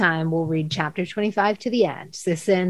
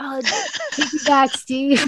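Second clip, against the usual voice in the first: mock hollering, high and swooping; 7 semitones higher than usual. Describing her own habit of running and yelling: retelling yelling while running. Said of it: "I'm just like running and like yelling like".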